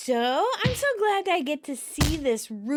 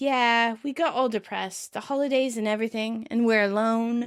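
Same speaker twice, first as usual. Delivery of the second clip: ordinary talk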